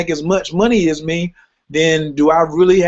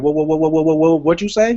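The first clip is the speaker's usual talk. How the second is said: put-on shocked stammer. Acting out how the other speaker will react to news: imitating Ro stuttering in shock. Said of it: "start to stutter".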